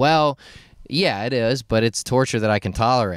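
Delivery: normal talking voice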